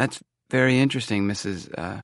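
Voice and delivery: plain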